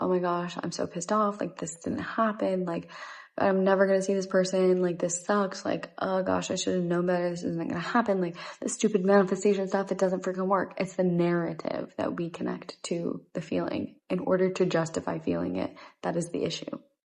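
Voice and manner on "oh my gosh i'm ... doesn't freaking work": ordinary delivery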